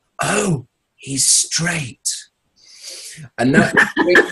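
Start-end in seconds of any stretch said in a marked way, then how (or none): 0.2-2.1 loud, high-pitched stage whisper. Retelling his dad turning to his mum at a gig, imitating a very loud whisper. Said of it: "very loudly whispers".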